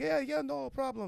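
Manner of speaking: put-on breathy voice with Italian accent. Retelling what an old barber answered: breathy italian guy voice. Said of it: "that breathy Italian guy voice".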